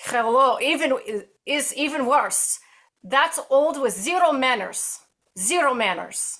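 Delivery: heavy put-on Russian accent. After praise for a french accent, speaker switches to quoting someone in a russian accent. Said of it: "let me do my Russian accent".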